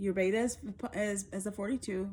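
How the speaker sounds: plain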